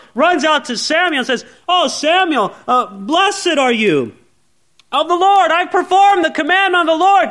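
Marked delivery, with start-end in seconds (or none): 1.7-7.3 acted smug, happy, cocky, triumphant tone. Retelling Saul running out to Samuel, acting out Saul happy and victorious. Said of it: "he's all happy and victorious".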